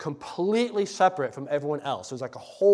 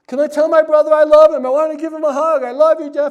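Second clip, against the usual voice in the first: shrill, high-pitched yelling at full volume; 12 semitones higher, 13 dB louder than usual. Retelling his brother calling out as he walked past silent family, imitating brother yelling. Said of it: "he's yelling".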